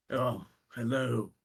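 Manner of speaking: put-on old man voice. Voicing a hunched old man greeting strangers: old man character voice. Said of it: "hunched over old man ... as he looks at you and goes".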